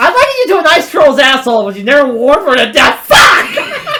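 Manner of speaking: acted meltdown, swooping, flipped-out, losing-it outburst. Insulting a foe in character during a card-drawn insult game: in character, flipping out. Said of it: "That is him in character saying that".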